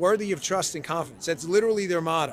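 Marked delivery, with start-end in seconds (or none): none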